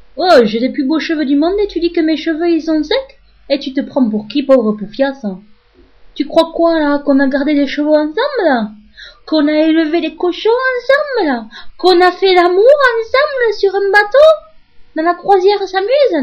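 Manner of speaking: put-on Marseille accent the whole way. Answering someone who called the speaker's hair dry, Marseille accent. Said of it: "prendre l'accent marseillais".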